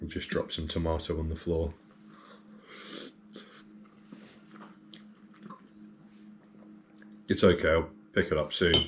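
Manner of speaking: half-whispered, breathy talk with mouth full of food. Eating an omelette while talking, with a sore tooth socket: talking with mouth full. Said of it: "struggling to contain food in my mouth right now".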